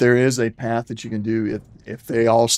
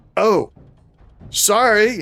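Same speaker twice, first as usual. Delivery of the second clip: very high, very loud, blaring outburst; 10 semitones higher, 3 dB louder than usual. Voicing a swaying character apologizing after a huge belch: said very loudly. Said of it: "says it very loudly".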